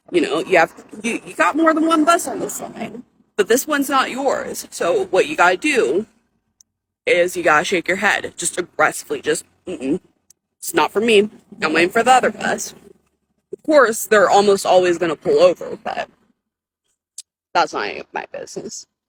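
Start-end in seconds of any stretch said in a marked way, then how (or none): 9.6-12.7 sarcastic, dismissive brush-off tone. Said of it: "I sense a lot of sarcasm in her tone of voice".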